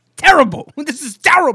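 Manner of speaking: very high, shrill, ear-splitting scream. Asked what he would say, giving one: screamed Stephen A. Smith impression. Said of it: "Don't scream like that".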